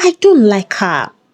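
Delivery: ordinary delivery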